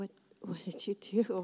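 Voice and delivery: put-on slightly scared tone. Retelling his reaction to hearing someone did something bad, acting a little scared. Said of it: "A little scared".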